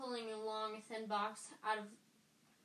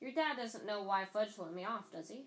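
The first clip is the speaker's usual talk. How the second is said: ordinary delivery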